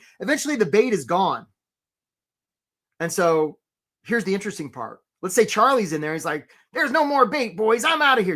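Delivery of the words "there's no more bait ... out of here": put-on crab character voice. Telling a story about crabs eating bait, in Charlie the crab voice. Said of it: "Did you like my Charlie voice?".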